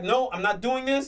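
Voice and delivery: ordinary delivery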